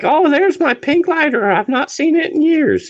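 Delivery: very high-pitched, overdone, teasing mock exclamation. Retelling how she jumped up at the lighter: imitating her finding the lighter. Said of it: "She jumped up like".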